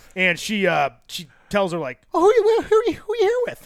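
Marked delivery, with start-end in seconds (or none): 2.1-3.6 put-on voice pitched way up high. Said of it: "that's a great Karen voice".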